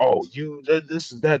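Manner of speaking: put-on screaming. Retelling how coaches reacted to a call: imitating coaches screaming. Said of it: "coaches just, like, screaming at me".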